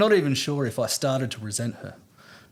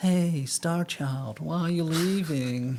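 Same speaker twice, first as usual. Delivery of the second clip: easygoing, slow, drawled hippie voice; 2 semitones higher than usual. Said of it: "it'd be more like".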